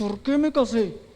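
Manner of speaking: put-on speech through clenched, gritted teeth. Recounting what a crying woman said, imitating her through clenched teeth. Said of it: "Así como apretando los dientes".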